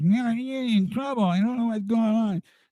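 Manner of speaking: shrill, very high, very loud plugged-nose voice. Retelling a phone call from a crying kid with his thumb glued to his nose: imitating a kid with nose plugged. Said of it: "he kinda sounded like this".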